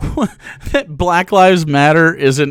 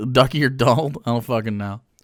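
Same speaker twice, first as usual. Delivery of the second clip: ordinary delivery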